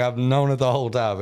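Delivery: ordinary talk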